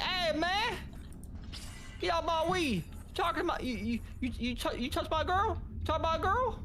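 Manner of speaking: very high, exaggerated, put-on street slang voice.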